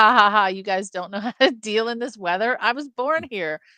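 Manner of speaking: mock taunting laugh in put-on character voice. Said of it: "This guy's like".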